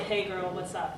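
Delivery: soft, bored, flirty voice. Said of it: "I, I sound bored".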